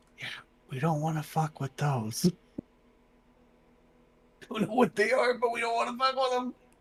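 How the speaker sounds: very quiet whisper. Creatures lurk far off in the fog; a player speaks, whispering very quietly. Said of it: "I'm going to whisper very quietly".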